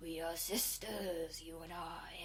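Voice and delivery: eerie monster voice, very slow and drawn out. Retelling a movie scene where the harpy speaks: imitating a creepy harpy voice. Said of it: "It has a creepy voice that's like".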